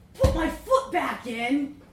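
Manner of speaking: ear-splitting, shrill, very loud shriek. Narrator reading a story, a man answers a woman's offer of help: shrieked. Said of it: "he shrieked".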